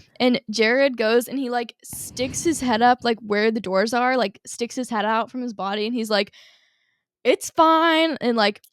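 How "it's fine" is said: mock, very loud, high, brash voice. Retelling someone sticking his head out between closing elevator doors, in a really loud voice. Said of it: "like in like a really loud voice".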